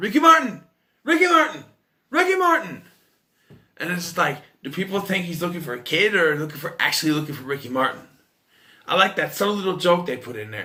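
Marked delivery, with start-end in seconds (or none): 0.0-2.8 mock shrill repeated yelling, pitched way up. Retelling a movie character yelling out the son's name, retelling yelling a name. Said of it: "And he's yelling out".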